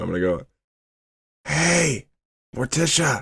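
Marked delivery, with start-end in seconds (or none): 1.5-3.2 high, carrying, loud stage whisper. A game character uses magic to whisper to another character: very loud whisper. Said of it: "I'm still gonna whisper".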